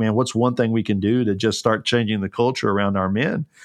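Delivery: ordinary talk, nothing marked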